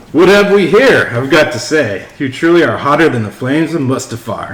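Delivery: loud, showy, flirty delivery. Reading a Star Wars pickup line when asked: Lando impersonation. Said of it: "in your best Lando impersonation".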